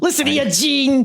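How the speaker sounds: very high, loud wrestling promo voice. Imitating a wrestler talking to Mean Gene in an interview: Rocco Rock voice. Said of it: "Or however Rocco Rock says it".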